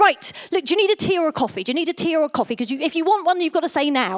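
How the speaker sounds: imitated loud shouting. Retelling how a woman in the lift shouted questions at them, retelling her shouting. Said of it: "she starts shouting at me like".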